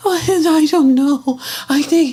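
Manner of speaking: put-on crying. Imitating an interviewee going back to crying: mock crying. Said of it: "Now she gonna go back to crying".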